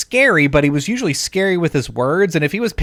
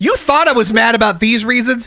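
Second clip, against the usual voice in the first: high, worked-up angry rant. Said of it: "He's like".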